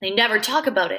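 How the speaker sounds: plain reading voice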